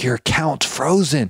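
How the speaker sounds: put-on hushed whisper. Retelling what the lady told a livid guy: imitating a whisper. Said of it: "Trying to whisper".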